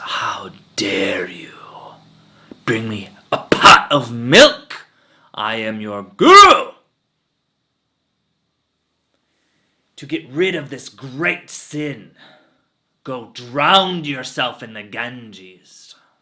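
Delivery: very loud, slow, furious, angry scolding. Retelling a parable, voicing a guru scolding an old woman: acting out an angry guru. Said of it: "he gets so angry".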